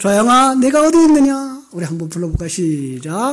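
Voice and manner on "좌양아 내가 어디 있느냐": booming, very loud, raised calling voice. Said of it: "제가 이렇게 불러야 되겠죠?".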